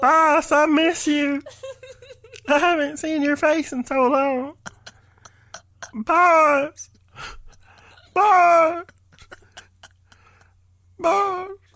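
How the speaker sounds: forlorn, sorrowful put-on voice, boss drawn out. Doing a bit in a made-up voice: sad put-on voice. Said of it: "There's like a sadness to it".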